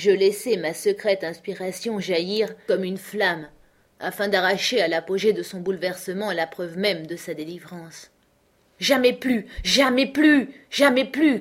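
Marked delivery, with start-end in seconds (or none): 8.8-11.4 loud, high, repeated crying out. The narrator, holding the child Miles, calls to an apparition, crying out. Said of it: "criai-je à l'apparition".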